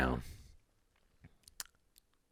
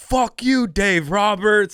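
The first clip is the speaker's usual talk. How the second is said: very high, loud heckling yell. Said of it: "people were just yelling out shit".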